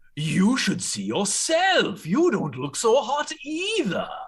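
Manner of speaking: high voice echoing up from the depths. Narrator voicing a voice the players hear from below, echoing from the depths. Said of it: "this voice echoing up from the depths below".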